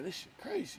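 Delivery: put-on hushed whisper through laughter. Retelling a mix-up over a pump number: imitating own laughing while talking. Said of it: "I start laughing like".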